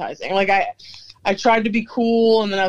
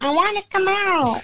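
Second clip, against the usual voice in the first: very high, tiny little creature voice; 12 semitones higher than usual. Recalling a small creature they both remember: little cute creature voice. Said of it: "The little cute voice".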